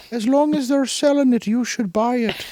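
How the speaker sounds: put-on slipping into an Irish accent. Joking in a put-on voice about buying whatever is sold: slipping into an irish accent. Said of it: "now he's Irish".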